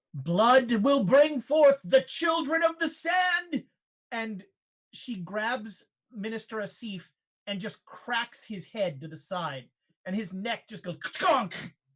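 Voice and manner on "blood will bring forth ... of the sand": resounding, commanding, echoing voice with rising pitch. Voicing a standing queen speaking to the canyon: booming echoing voice. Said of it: "in a voice that echoes throughout the canyon".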